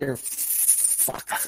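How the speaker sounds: mock whisper. Retelling how a favorite figure delivers a line, in a whisper. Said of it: "He just like whispers".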